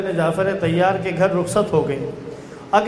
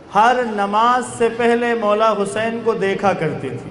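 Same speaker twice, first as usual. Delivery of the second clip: ordinary talk, nothing marked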